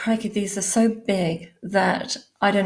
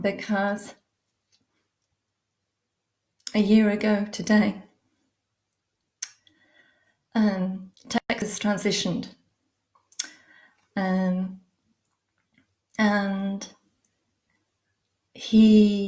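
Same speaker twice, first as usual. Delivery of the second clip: voice holding back tears, near crying. Announcing that Texas transitioned a year ago today, holding back tears. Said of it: "how can I do this without crying?".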